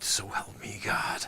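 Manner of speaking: slow, soft, drawn-out, almost whispered ending. Showing Dusty how to deliver the final words, the speaker drops almost to a whisper. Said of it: "you got to almost come down to a whisper".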